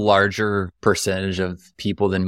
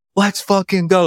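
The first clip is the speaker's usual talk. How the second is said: very high, excited, pumped-up, fired-up shout; 11 semitones higher, 4 dB louder than usual. Retelling working out early in an apartment: imitating own yelling. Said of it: "I'm yelling".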